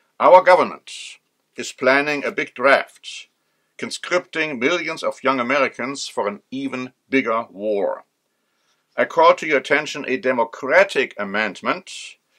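normal talking voice

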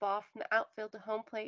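plain

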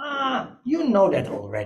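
put-on very thick Dutch Yiddish accent, drawn out. Quoting a woman answering repeated questions, in her thick Dutch Yiddish accent. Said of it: "with this very thick Dutch Yiddish accent".

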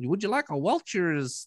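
high mock old-lady voice. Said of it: "she's like".

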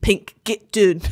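imitated Scottish accent. Browsing Google Maps and mimicking a man's phrase, Scottish accent. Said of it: "That's Scottish".

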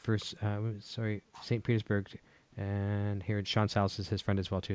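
mumbling a little. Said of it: "Sorry, I'm mumbling a little bit".

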